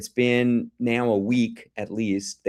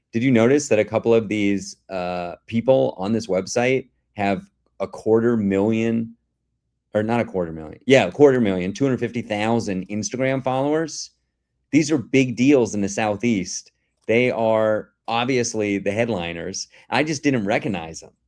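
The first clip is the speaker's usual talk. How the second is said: ordinary delivery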